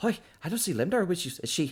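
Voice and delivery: a little panicked, pitched very high. Voicing Yijin asking the group where Lemdar is, panicked. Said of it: "have a little bit of a panicked voice".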